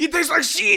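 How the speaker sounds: mock French chef accent. Mocking head chefs on cooking shows: imitating a french chef accent. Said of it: "it's always, like, a French guy".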